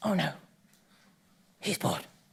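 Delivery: low, nagging monkey-like voice. Acting out the anxious inner voice during a talk: the monkey mind's voice. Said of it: "I don't know why it's got a voice like that".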